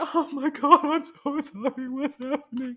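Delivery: uncontrollable, very high, loud blubbering weeping. Retelling how the guy reacted to the paintings, imitating uncontrollable weeping. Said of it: "starts like weeping uncontrollably".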